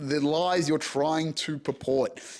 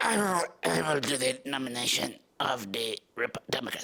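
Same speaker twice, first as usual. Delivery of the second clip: low, croaking voice; 4 semitones lower, 4 dB quieter than usual. Wondering who will replace Biden, the speaker does a croaky RFK impression. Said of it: "I'm trying to just be croaky".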